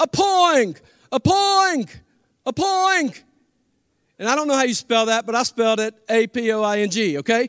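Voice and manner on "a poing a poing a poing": put-on very high, stretched, drawn-out child's shriek. Retelling a child standing on her chair at supper: imitating a child screaming. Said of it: "So she starts screaming".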